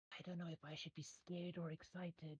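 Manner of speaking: very quiet, soft, high half-whisper. Game narrator voicing a character as a player bends to cover his eye, half-whispering. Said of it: "he kind of whispers".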